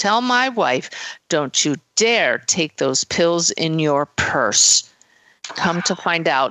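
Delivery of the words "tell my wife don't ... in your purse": put-on very stern, severe, commanding tone. Relaying a dead husband's message for his wife, retelling it in a very stern voice. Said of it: "in a very stern voice".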